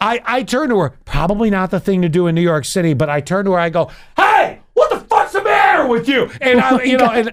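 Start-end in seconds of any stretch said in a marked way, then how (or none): 4.2-6.3 mock very high, shrill yelling. Speaker retells turning on a woman in New York City, retelling a yell. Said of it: "I'm yelling at someone".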